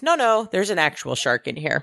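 ordinary talk

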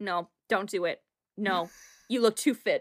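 put-on deadpan voice. Retelling a castmate telling a crying Claudia not to leave: imitating Sammy, straight-faced. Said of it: "just straight-faced".

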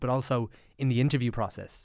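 ordinary talk

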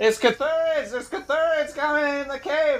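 very high, shrill, shouted yell. Shouting in character to warn a companion about approaching spiders: shouting a warning. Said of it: "I'm gonna shout to top card".

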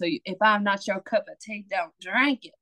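put-on South Mississippi accent. Plugging a shirt that is coming out, say its slogan in a put-on Mississippi accent. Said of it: "I got to put on that Mississippi accent".

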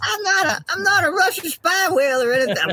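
very high-pitched female whale voice. Joking about being a Russian spy whale: Wanda Sykes as a beluga whale. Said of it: "Why do I sound like Wanda Sykes as a".

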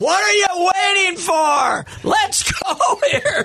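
very high, shrill scream, yelled to carry. Retelling how a man reacted to a five-minute game review, imitating a scream. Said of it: "and he screamed".

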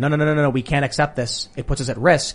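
plain

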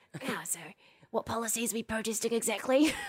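doubting, questioning critic's voice. Imitating a critic asking what policies are being protested: imitating Trevor's voice. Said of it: "This is his voice".

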